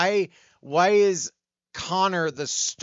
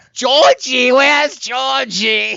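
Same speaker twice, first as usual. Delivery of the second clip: shrill, very loud, belted, very high-pitched call; 11 semitones higher, 11 dB louder than usual. Retelling how a cast member asked about Georgie: Pennywise voice. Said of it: "I almost felt like Pennywise being like".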